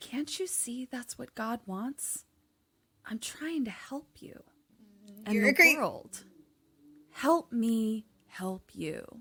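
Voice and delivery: hushed, casual, very quiet, sweet and calm voice. Retelling a scene where a woman urges a man: imitating a sweet, calm voice. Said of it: "very casually, sweetly, and calmly says".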